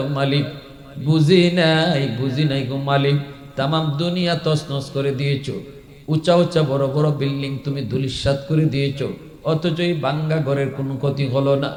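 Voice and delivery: ordinary talk, nothing marked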